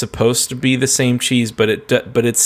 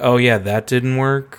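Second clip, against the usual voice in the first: mock sarcastic tone. Acting out a pest control guy's line to a cartoon character: imitating a sarcastic remark. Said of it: "he's kinda sarcastically".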